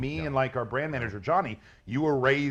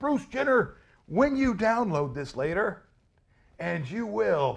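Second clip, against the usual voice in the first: confrontational, aggressive, put-on voice; 7 semitones higher than usual. Insisting he means no offense, he acts out addressing a camera, mock-aggressive. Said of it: "that voice you had right there, though, that was very aggressive".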